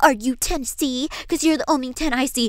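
mocking, put-on, annoying, grating, irritating voice. Mimicking the other speaker's repeated pickup line, mocking an annoying, grating voice. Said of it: "Hear your annoying, grating voice saying".

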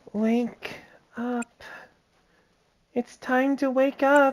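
drowsy, high, very slow, drawn-out voice. Voicing a game character's dialogue while playing: sleepy voice. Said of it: "I will just give her a sleepy voice".

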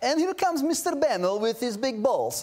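funny put-on Russian accent. Retelling how a man would greet people when coming to work: funny Russian accent. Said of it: "Why did it have to be Russian?".

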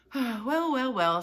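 sighing, very high and very loud. A man sighs to the children left after two others are gone: sighing. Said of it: "sighed Mr. Wonka".

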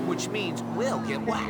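ordinary talk

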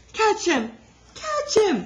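shrill, very high, swooping shrieking scream. The younger girls cry out as Ribsy runs away, screamed. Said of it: "screamed the younger girls".

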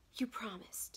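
low, whispered hiss under the breath. Reading aloud a novel's line where a wife hisses: lowered hissing voice. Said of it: "when I just lowered my voice there and said".

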